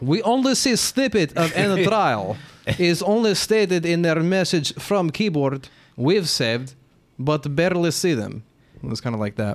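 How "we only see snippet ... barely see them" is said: very slow, deliberate, put-on Russian accent. The speaker acts out how a message sounded when read: russian accent. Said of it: "Good Russian accent".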